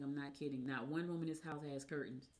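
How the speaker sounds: ordinary talk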